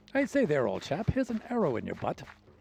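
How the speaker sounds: put-on posh upper-class British accent. Voicing a skeleton archer's line: posh British accent. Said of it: "skeleton archers would always have the posh British accent".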